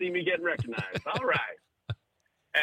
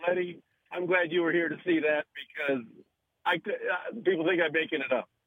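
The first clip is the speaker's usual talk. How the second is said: ordinary talk, nothing marked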